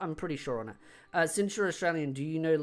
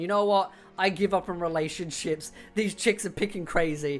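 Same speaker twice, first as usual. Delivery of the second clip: acted, dry, tongue-in-cheek sarcastic throwaway tone; 3 semitones higher, 5 dB louder than usual. Retelling a joking reply to a tweet about dating: retelling own sarcastic joke. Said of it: "I was jokingly just being sarcastic".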